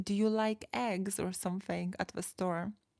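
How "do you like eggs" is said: plain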